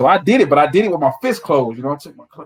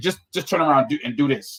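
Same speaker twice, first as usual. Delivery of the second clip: ordinary talk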